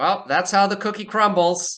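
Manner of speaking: very high, tinny, distorted speaker-box voice. Voicing a figure answering people who couldn't arrive on time, distorted tinny voice. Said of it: "slightly distorted, tinny voice emanates".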